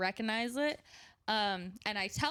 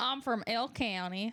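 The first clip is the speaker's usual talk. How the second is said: fake Texas accent, much slower. Retelling answering a man from texas, in a fake texas accent. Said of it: "I started talking to him the whole time like this".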